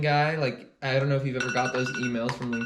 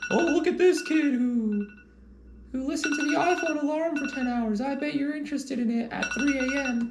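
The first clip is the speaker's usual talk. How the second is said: very high, pitched-up cartoon frog puppet voice; 12 semitones higher than usual. Voicing the YouTube algorithm recommending a video: Kermit voice. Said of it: "I had the Kermit voice".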